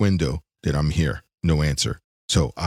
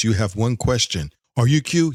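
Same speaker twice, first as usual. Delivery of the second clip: put-on all-powerful being voice; 5 semitones higher than usual. Imagining q answering callers on the phone: q voice. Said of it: "Q answers the phone. He goes".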